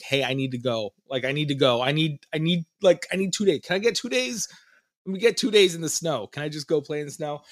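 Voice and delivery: put-on begging tone. Speaker recounts asking their wife for two days away: retelling pleading with wife. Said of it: "I started begging my wife".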